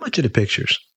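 casual, offhand, nonchalant, pitched a little high. Melissa asks the wrestling star Ivan Koloff a question: nonchalant. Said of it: "Melissa asked nonchalantly".

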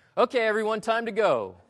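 forced, over-bright cheer. Retelling what an american dad who was filming said to everyone; mock overly cheery voice. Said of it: "said in an overly cheery voice".

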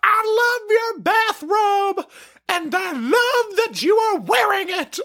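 very high, shrill, screamed-out voice. Retelling a woman on a passing bike calling out: imitating someone screaming. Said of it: "She screams out".

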